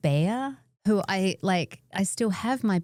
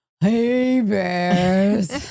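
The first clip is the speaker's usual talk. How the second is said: put-on world-weary, seen-it-all tone, "bears" drawn out; 7 dB louder than usual. Imitating the other speaker greeting the bears: mock world-weary tone. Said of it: "say with a kind of world weariness".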